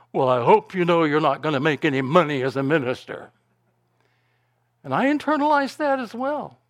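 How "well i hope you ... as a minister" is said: put-on voice full of disgust. Retelling his father's reply after saying he'd be a minister, imitating a disgusted tone. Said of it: "in a disgusted tone".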